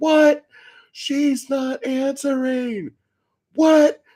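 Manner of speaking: very high, loud, disbelieving shout. Retelling an older man yelling back and forth, retelling a yell of disbelief. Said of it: "start yelling back and forth".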